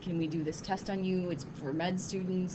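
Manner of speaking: normal talking voice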